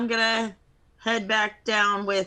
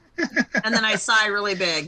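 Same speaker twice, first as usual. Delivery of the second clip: usual speaking voice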